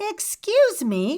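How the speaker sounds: ordinary delivery, nothing marked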